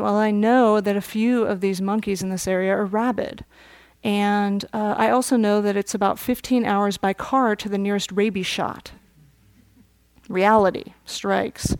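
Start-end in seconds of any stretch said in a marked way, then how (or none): none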